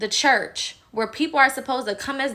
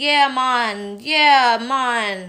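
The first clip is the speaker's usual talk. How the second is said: put-on loud drawn-out Jamaican accent; 5 dB louder than usual. Mocking a politician's accent switching: imitating Kamala's Jamaican accent. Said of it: "she wants to show her Jamaican side".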